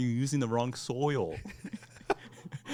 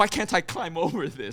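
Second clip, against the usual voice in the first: mock mild, half-strength, frustrated angry yell; 4 semitones higher than usual. Recalling a game moment to the other player, retelling own yelling. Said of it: "I was yelling because I was like".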